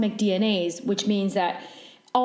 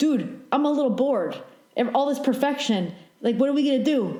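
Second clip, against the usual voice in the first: put-on New York accent; 4 semitones higher than usual. Describing creation, voicing someone upstairs, in a New York accent. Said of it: "why do you have like a New York accent?".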